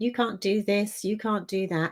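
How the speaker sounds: ordinary delivery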